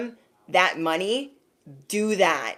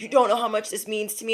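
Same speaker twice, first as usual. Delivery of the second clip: fast, mock crying, tearful, overcome with feeling; 2 semitones higher than usual. Retelling a kid's thanks after being given money, imitating a kid crying. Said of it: "he was crying in tears".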